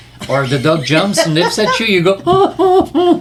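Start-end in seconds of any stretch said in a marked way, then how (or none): 2.3-3.2 very high, loud, weird hurt yelp. Describing the moment a dog nips you, acting out a weird noise. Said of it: "this weird noise comes out".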